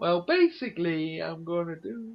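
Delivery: put-on high voice. Describing a YouTuber's videos to others, imitating his high-pitched voice. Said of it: "he starts off with a high pitched voice".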